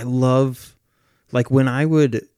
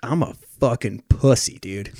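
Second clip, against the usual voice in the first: laid-back dudebro voice. Mimicking a typical guy while chatting with a friend, bro voice. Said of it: "you start to sound like a bro".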